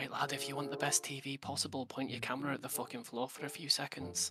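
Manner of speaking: soft, hushed half-whisper. Playing a role-play scene, leaning into the gnome: half-whispering in character. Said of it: "I'm gonna lean into the gnome and whisper".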